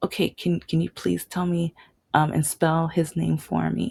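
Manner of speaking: put-on whisper. Retelling asking a couple to spell a name: imitating own whisper. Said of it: "so I whispered to".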